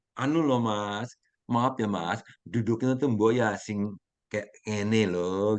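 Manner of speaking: calm, unhurried, slow delivery. Contrasting Javanese and Sumatran ways of asking about sitting, imitating a calm Javanese speaker. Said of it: "Kalau orang Jawa kan ngomongnya kan kalem".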